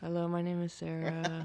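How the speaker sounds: mock-sultry seductive voice. A first-time guest on the show, introducing herself into the mic: sultry voice. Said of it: "she's going with that sultry voice".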